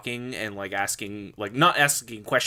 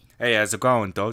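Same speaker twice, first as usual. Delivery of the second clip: put-on New York Italian accent; 5 dB louder than usual. Imagining someone called Red Cannoli greeting viewers: Red Cannoli New York Italian accent. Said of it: "like that like really New York accent".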